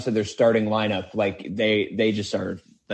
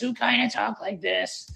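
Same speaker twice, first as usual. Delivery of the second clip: very high, rough, scratchy, creaky odd voice; 12 semitones higher, 3 dB quieter than usual. Recalling working with Bruce Weber, imitating him: Bruce Weber weird voice. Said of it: "And he had the weird voice".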